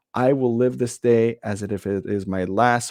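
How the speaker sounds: ordinary delivery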